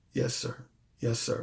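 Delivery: very quiet, soft, gentle, low, hushed voice. Retelling how she answered him: imitating her soft, low voice. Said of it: "She had a real soft voice".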